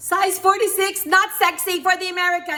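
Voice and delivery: loud, near-shouted, full of push. Quoting what a woman said, as loud as she did: very loud, almost yelled. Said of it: "I'm gonna do it as loud as she did".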